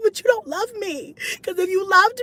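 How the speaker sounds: fake tearful pleading. Retelling pleading with a partner to come hold her: mock crying. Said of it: "I'm not really crying".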